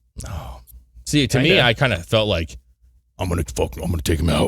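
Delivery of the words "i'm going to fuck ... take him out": put-on tough hero voice. Imagining how Durham should sound: Durham in a Batman-like voice. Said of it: "Like a Batman?".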